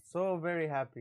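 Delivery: put-on sarcastic cheerfulness. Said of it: "I'm just being sarcastic".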